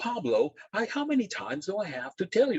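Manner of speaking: very high, fed-up, exasperated scolding. Retelling scolding a kid who dropped something after a bad day: retelling a frustrated scolding. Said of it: "I use that tone of voice".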